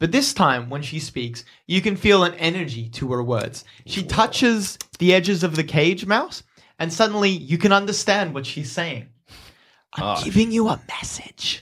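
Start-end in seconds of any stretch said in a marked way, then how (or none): 9.9-11.6 confiding, secretive whisper. Voicing a character speaking through a cage: whispering like confiding a secret. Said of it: "she whispers, as if a friend confiding a secret".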